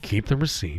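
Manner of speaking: hushed, confidential stage whisper. Retelling what a man at the counter half-whispered about the receipt, imitating his half-whisper. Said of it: "he's like whispering to me at the counter".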